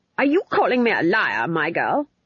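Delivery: sharp, snapped tone. A woman watching a play answers her colleague, snapped. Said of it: "snapped Granny".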